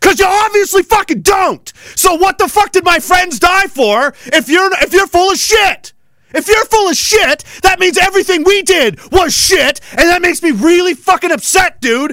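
furious, loud, angry shouting rant. Speaking to someone who nearly got them killed, yelling. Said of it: "Sorry for yelling".

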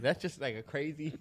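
talking through laughter. Reacting to a story about a dry burger, laughing while talking. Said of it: "I'm laughing at burger".

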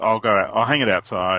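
usual speaking voice

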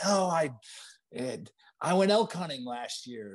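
put-on yelling. Recounting yelling at the instructor over the engine roar; retelling own shout. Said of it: "I yelled at him".

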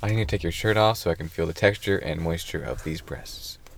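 flat, businesslike deadpan, low, soft monotone. Told to say it in a monotone to sound professional, the speaker repeats it; deadpan monotone. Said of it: "say it in a monotone voice so it sounds like you're being professional".

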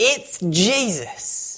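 mock very high, delighted, gleeful, proclaiming tone. Retelling how a woman declared her answer at the story's end, imitating gleeful delight. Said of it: "She declared with this gleeful delight".

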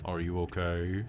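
low, deep, resonant, faintly echoing voice. A game master voices an animal heard through speak with animals, deep resonant echoing voice. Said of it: "in a deep, resonant, slightly echoing voice".

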